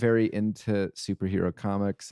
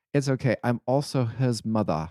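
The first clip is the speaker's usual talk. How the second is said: put-on British accent; 2 semitones higher than usual. Retelling what a teacher said after slapping a kid, in a British accent. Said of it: "in her British accent".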